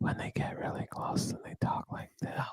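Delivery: close, breathy, very quiet hushed whisper. Complaining about whispering in a commercial, the speaker demonstrates it: whispering.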